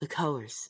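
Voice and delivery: put-on seductive, showy sexy voice. Reading a passage aloud for viewers, in a put-on sexy voice. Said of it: "I gotta read this in the sexy voice".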